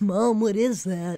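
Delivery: silly, goofy dog voice. Talking about the dogs' Christmas stocking, the speaker voices a dog: goofy dog voice. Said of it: "That's one of my dog voices".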